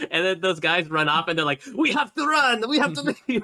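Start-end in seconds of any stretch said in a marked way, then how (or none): 1.7-3.4 very high, put-on French accent. Retelling what the guys shouted as they ran off, in French accents. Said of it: "saying it in the French accents".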